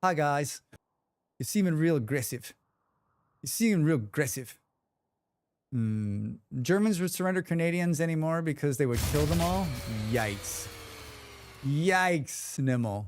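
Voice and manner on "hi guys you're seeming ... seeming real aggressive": quick New Zealand accent on every word. Mid-conversation, the speaker redoes a line in a kiwi accent. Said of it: "just imagine me with a Kiwi accent".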